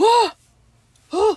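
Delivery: oh blurted high and loud, flustered.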